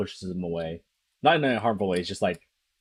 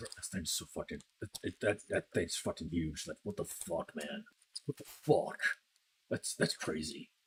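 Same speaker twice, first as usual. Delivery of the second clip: hushed, whispered mutter under the breath; 3 semitones lower, 11 dB quieter than usual. Speaker acts out a man approaching a horse, muttering under his breath. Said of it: "under his breath saying".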